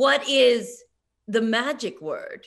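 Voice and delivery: loud, very slow, strangely measured odd rhythm. Suggesting how the line could be said, the speaker does a Walter Peck cadence impression. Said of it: "in the cadence of that guy from Ghostbusters".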